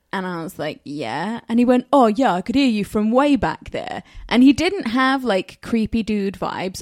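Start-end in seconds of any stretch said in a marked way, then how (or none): 1.9-4.0 strong, put-on London accent. Recounting a man who approached two women in a park, in a London-y accent. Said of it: "a very London-y accent".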